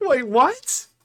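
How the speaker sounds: speaking while laughing loudly. Reacting to a game crash, laughing loudly while talking. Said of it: "Sorry for laughing so loud".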